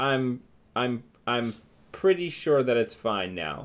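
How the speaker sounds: flat, expressionless delivery. Player unlocks the door for the others, then speaks with a deadpan expression. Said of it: "most deadpan expression I can muster".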